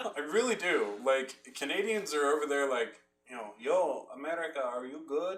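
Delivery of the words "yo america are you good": put-on Middle Eastern-accented speech. Act out Canadians checking on America, imitating Canadians, turning Middle Eastern. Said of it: "I don't know why I turned, like, Middle Eastern".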